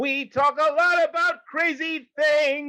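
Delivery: high, slow, strained dying-sounding shout. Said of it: "You sound like you're dying".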